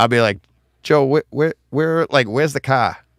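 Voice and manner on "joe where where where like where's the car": put-on heavy Boston accent, laid on thick, pitched up. Retelling something he said at home, in a thick Boston accent. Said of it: "that was too thick".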